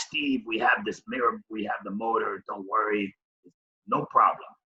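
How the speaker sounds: soft, rough, raspy, deep scratchy voice. Retelling a man's reply to the speaker, in a deep, scratchy voice. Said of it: "he had this deep, scratchy voice".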